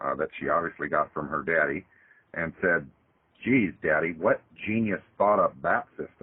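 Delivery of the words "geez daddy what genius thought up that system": mocking, sarcastic teenage-girl tone. Retelling what a fourteen-year-old daughter said after watching Addendum: imitating a sarcastic daughter. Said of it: "this sarcasm in her voice".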